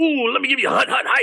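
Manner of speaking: very high, hurried, gritty sports-guy patter. The speaker demonstrates a character's voice, a sports guy: gritty, quick, excited sports-guy voice. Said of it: "a little bit of a gritty voice, but like a little bit quicker".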